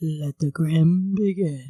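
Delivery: eerie, low, put-on spooky voice. Offering to introduce the other speaker's story, saying the opening in a spooky voice. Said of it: "I'm going to say it in a spooky voice".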